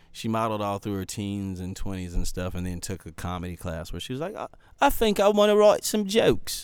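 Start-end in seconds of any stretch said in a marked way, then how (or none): 4.8-6.6 very high, pitched-up put-on British accent. Quoting a British friend who took a comedy class, in a put-on British accent. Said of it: "That was my British accent".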